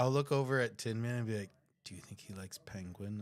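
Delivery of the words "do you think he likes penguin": quiet mutter, lower pitch, quieter. Asking a companion in character about feeding a creature, muttered under breath. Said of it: "under my breath".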